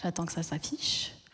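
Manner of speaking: soft, low whispered aside.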